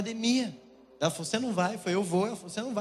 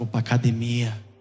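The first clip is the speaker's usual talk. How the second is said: thick, very low, loud deep voice; 10 semitones lower, 6 dB louder than usual. Retelling his reply when his partner asked where he was going, in a deep voice. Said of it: "Eu falei até com a voz grossa".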